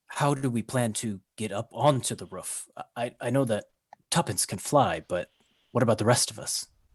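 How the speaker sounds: faint, barely-there half-whisper, as quiet as possible. Voicing a character asking the group a plan: half-whispering as quietly as possible. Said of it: "he whispers as quietly as he can".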